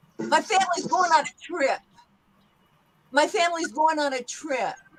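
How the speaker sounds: native New Yorker speech. In an accent practice session, repeating a practice sentence in a new york accent. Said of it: "similar in a New York accent".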